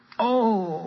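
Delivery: long, very high, drawn-out groaning oh. Reading a story aloud: the snake, freed from under the rock, groaning. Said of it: "groaned Sly".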